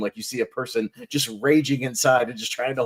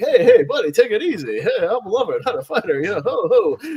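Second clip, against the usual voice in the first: loud, raised, pitched-up voice swinging up and down; 9 semitones higher, 6 dB louder than usual. Retelling a movie scene, calming an angry man: Rodney Dangerfield impression. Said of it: "We then cut to Rodney Dangerfield, who's like".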